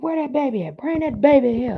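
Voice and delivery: very high-pitched grandfather voice calling out. Imitating how a grandfather talked, calling for the baby: imitating grandfather's way of talking. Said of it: "That's just how my granddaddy talked".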